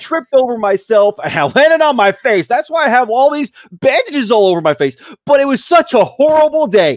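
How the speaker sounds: bright, cheerful news voice, very high and loud. In a mock news segment, reporting a horrible day with a happy tone. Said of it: "giving bad news with a happy tone".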